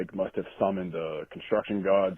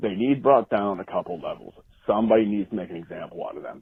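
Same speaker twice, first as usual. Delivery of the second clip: ordinary talk, nothing marked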